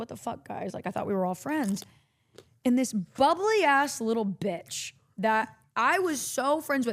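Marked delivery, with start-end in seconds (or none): 0.0-1.8 mock genuinely wounded, hurt and upset tone. Retelling being left out by coworkers: retelling own hurt words.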